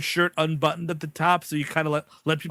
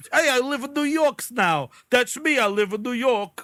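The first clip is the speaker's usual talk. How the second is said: put-on New York accent, higher; 6 semitones higher than usual. Mocking someone who now talks differently after moving: imitating a new york accent. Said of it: "are you gonna just talk like this".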